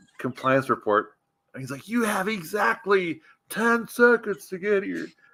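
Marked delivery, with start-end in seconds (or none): 1.9-5.1 screaming, pitched higher. Retelling a phone call full of obscenities: imitating Greg Wilher screaming. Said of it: "screaming, like, these obscenities".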